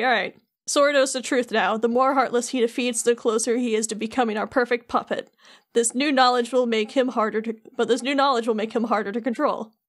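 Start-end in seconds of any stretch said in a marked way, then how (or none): none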